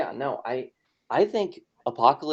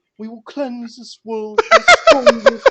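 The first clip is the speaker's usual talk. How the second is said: cuddly-bear villain voice, much higher, louder; 10 semitones higher, 12 dB louder than usual. Describing how Apocalypse sounds, quoting him as edgelord Winnie the Pooh. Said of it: "sounds like what if Winnie the Pooh was an edgelord".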